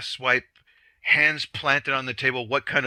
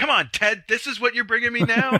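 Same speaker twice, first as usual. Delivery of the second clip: mock angry shouting, higher; 10 semitones higher than usual. Imagining the moderator shouting at his producer: imitating someone shouting. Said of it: "a scene of him shouting at his producer".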